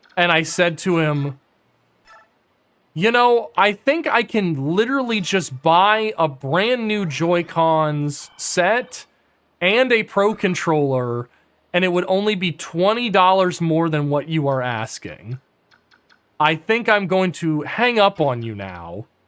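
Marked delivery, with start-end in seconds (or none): none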